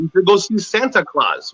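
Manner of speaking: ordinary talk, nothing marked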